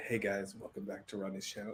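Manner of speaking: very soft, low, light ASMR whisper.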